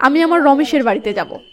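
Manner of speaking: ordinary talk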